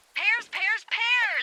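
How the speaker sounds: high, loud excited shout.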